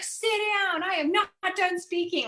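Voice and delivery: furious judge voice. Retelling how a judge talked to a lawyer in court, imitating an angry judge. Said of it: "angry and he was".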